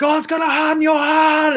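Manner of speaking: loud, very high shrieking scream. Retelling how she screamed at me as I walked away, imitating someone screaming. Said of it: "she's screaming at me".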